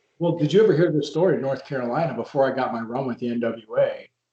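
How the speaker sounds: usual speaking voice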